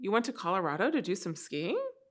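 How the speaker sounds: rising questioning tune on skiing. Showing how to repeat back what someone said: rising question tone on skiing. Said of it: "Inquiry tone at the end. It sounds like a question".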